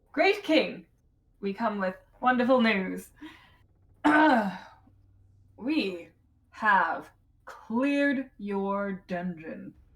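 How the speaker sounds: loud, boisterous tone. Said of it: "come out with, like, boisterous attitude".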